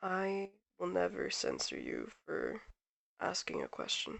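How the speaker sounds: hushed, very quiet, very soft voice. Voicing a character who answers a hesitant question: quietly. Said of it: "just quietly goes".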